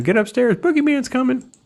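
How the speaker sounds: very high-pitched scream. Retelling a movie scene where she screams a warning: imitating someone screaming. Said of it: "she starts screaming at him".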